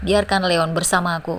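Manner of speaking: usual speaking voice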